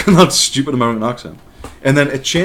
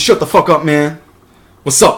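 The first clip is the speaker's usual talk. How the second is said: mocking put-on slang, like a posing teen; 4 semitones higher, 4 dB louder than usual. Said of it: "he's talking".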